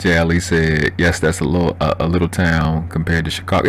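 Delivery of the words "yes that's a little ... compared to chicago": usual speaking voice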